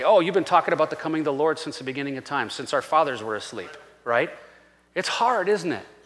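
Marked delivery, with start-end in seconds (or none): none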